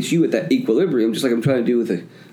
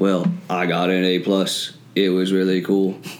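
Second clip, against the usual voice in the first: put-on robot voice, much lower; 5 semitones lower than usual. Talking about what school taught them, the speaker says it in a robot voice. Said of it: "is that your robot impression?".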